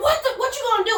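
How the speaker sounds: shrill, very high screaming, acted out. Retelling getting out of the car at a light, imitating own screaming. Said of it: "just screaming".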